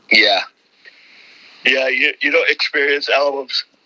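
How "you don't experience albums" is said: speaking mid-yawn, much higher pitch. Talking with another speaker, apologizing for a yawn, yawning while speaking. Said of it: "Sorry, yawning".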